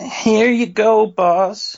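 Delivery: pathetic, high-pitched dweeb voice. Rehearsing a scene, handing the boss his coffee, in a high-pitched dweeby Agent Falcon voice. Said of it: "more high-pitched".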